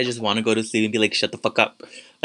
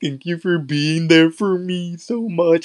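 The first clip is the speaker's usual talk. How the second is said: put-on, high, choked, tearful little-child crying whimper; 7 semitones higher, 4 dB louder than usual. Retelling crying while holding someone's hand, imitating whimpering while crying. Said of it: "i was whimpering like i couldn't talk".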